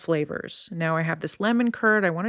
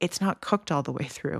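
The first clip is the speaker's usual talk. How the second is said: quiet, hushed whisper; 2 semitones lower, 4 dB quieter than usual. Retelling what a grad student said while cutting the cake: imitating someone whispering. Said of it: "she whispered to someone".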